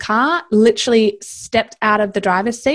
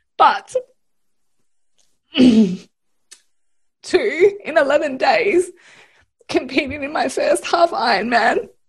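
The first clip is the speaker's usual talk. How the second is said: halting, tearful crying through broken phrases, pitched up; 5 semitones higher than usual. Speaker getting emotional about her journey, crying. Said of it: "I'm crying because I'm so fucking proud".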